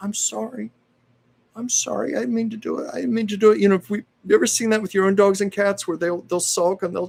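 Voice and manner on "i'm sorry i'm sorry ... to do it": very high, sulking, sorry kitten voice. Voicing a sulking kitten after it broke a lamp: voicing a sulking, apologetic cat. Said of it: "it was almost like she was going".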